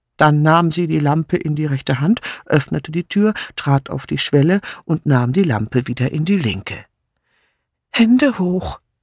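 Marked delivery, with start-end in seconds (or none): 7.9-8.8 trembling, shaky, quavering voice. A narrator reads a woman with a lamp calling out from the kitchen threshold, shaky-voiced. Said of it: "rief sie mit zittriger Stimme".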